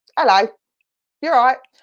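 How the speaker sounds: put-on strong Essex accent. Describing how a man comes across, strong Essex accent. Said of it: "when I get my strong Essex accent on".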